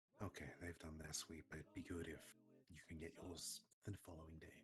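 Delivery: very soft, hushed, barely-there half-whisper. Half-whispering an in-character message to a companion: half-whispering in character. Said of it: "I'm gonna whisper to him at this point".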